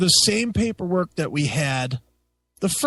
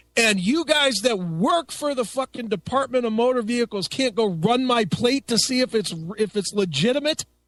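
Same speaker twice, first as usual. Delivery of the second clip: high, mouthy lip-off. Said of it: "started fucking lipping off to the guys".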